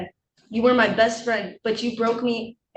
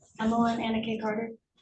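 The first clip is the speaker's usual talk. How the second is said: barely audible, too quiet, quieter; 7 dB quieter than usual. Giving full name in court after being asked to speak loudly: speaking too quietly. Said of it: "She needs to speak up".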